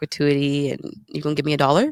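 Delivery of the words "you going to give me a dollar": mocking put-on Indian accent. Retelling a comedian mocking a waiter about gratuity: imitating an indian accent. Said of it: "using an Indian accent".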